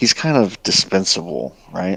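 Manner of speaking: sly, hushed, half-whispered stage whisper. Half-whispering in character to the party about a zombie ally: half-whispering. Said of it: "and I'll just whisper".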